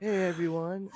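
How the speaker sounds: sedated, sleepy, drowsy flat monotone. Mocking a show intro as if on Xanax, in a mock-sedated delivery. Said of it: "I sound like I snorted a Xanax before the show".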